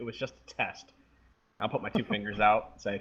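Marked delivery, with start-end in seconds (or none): 0.0-0.9 amused voice with a laugh in it. Voicing a character whose spell failed, laughing while speaking. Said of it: "I'm gonna laugh and say".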